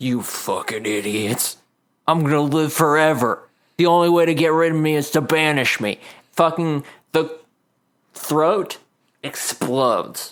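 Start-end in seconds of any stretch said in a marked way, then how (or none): 0.0-6.0 speaking through broken teeth. Standing at full height, he looks down at the group, speaking through broken teeth. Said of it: "with broken teeth says".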